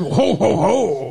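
chuckle like a forties gangster. Doing own "ho ho ho" as a 1940s gangster: Edward G. Robinson gangster voice. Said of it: "like Edward G. Robinson in a, like, nineteen forties gangster".

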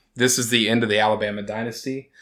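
ordinary delivery

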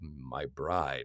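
rich baritone, dropped very low. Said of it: "rich baritone, Darth Vader-y kind of voice".

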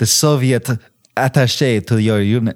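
French-accented pronunciation. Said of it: "I did the French accent".

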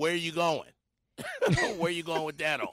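mocking, sarcastic, with swooping pitch. Retelling what the wife would say about that outfit: mock-sarcastic quote. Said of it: "She'd have got a sarcastic".

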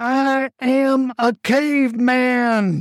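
desperate, high scream, very drawn out. Bart, opening his eyes wide at the girl over him, screamed. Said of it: "Bart opened his eyes wide and screamed".

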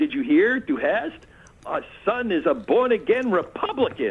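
put-on yelling. Retelling the mother calling to the father in another room: imitating someone yelling. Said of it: "she yells into the other room".

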